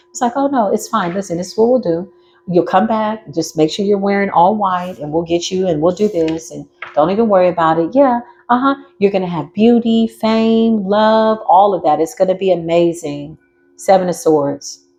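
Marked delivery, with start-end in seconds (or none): 0.3-13.4 relaxed, reassuring, very calm, unraised voice. Speaker voicing the devil talking someone into a deal, acting calm as the devil. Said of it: "The devil doesn't raise his".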